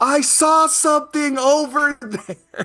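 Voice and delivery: loud shouting, yelling loudly. Warning a companion in the woods, shouting over loud noise. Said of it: "shout like we're in a helicopter".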